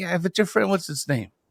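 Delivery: high-pitched sarcastic tone. Retelling a question put to a young daughter: retelling a sarcastic remark. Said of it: "And then I start getting sarcastic".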